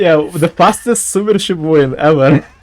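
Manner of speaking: giggly, cracking up, laughing through the words. Commentating a game, laughing while talking. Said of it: "You have to stop laughing".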